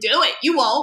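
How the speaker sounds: loud, mocking, laughing taunting tone. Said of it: "I was like".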